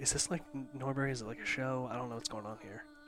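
very quiet, low, hushed half-whisper. Leaning over to a fellow passenger on board, half-whispering. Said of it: "I'm still whispering".

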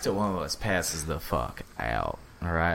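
put-on southern drawl. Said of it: "That's why we're talking like Matthew McConaughey".

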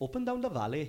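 put-on Welsh accent. Asked if they can do welsh accents, demonstrating one sentence, welsh accent. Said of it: "I can do in Welsh then".

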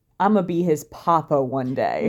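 ordinary talk, nothing marked

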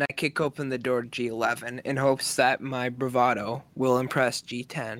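normal talking voice

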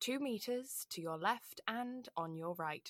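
very soft, quiet sat-nav voice. Fed up after repeating directions to the washrooms, the speaker answers: sat-nav voice. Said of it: "my sat-nav voice".

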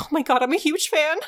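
excited, starstruck, gushing fan voice. Retelling a spirit meeting Eden: imitating an excited fan. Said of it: "She's really excited to meet Eden specifically".

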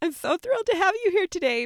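very high, quick, thrilled, excited voice. Welcoming a guest who just said thanks: high excited voice. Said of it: "My voice gets high when I get really excited".

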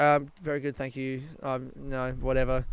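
plain

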